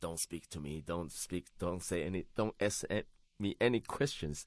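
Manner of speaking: plain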